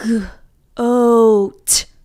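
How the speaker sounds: "goat" slow and stretched, each sound pulled apart. Showing young learners how to stretch a word: stretched out word. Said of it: "Let's stretch it again".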